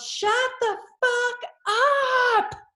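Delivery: shrill yell, very high, stretched out. Retelling waking up after the heart restarted: imitating own past yell. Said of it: "and I just yelled".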